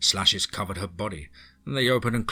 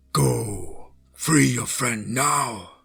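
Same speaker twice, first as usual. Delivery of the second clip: very slow, creaky, distorted voice; 4 semitones higher, 4 dB louder than usual. Reading a story, a beautiful woman commands the narrator, distorted commanding voice. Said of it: "in a distorted voice, commanded me".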